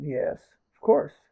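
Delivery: mock arrogant tone. Recounting how someone reacted after a challenge, imitating their arrogant tone. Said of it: "First challenge".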